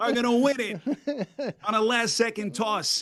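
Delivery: fake sports announcer voice. Calling a made-up last-second touchdown on request: mock touchdown call. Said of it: "can you call us a faux Alley Cox touchdown".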